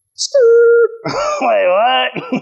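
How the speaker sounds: surprised, blurted-out laughing outburst.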